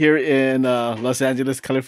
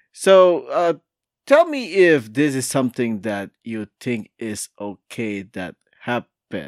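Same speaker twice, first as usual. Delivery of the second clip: slow, unhurried pace with drawn-out "so". Show host introduces a news story while still scanning the article, talking slowly. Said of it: "I am talking slow because I am trying to scan".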